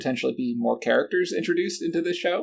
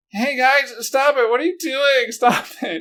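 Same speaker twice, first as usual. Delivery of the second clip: high, loud, whiny complaining tone; 12 semitones higher, 6 dB louder than usual. Imitating a character breaking up a shoving match: mocking Jack's whiny voice. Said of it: "It just sounds so whiny".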